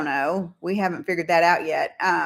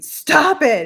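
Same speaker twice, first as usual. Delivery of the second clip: very high-pitched, raised yell; 10 semitones higher, 6 dB louder than usual. Retelling looking through videos last night: retelling a yell at the screen. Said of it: "I was just yelling at the screen".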